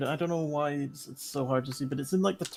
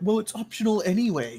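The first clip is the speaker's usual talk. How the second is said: play-acted sarcastic tone of voice, pitched up; 6 semitones higher, 3 dB louder than usual. Retelling how the other speaker's words came across: imitating partner's sarcastic tone. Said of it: "so the tone of voice you said, you were like".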